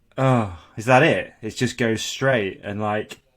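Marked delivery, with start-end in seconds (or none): 0.2-1.3 play-acted disappointment, loud, slow, deflated, let-down. Imagining the driver's reaction once the vehicle just goes straight: imitating the disappointed jet ski driver. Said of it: "he goes straight and then he goes".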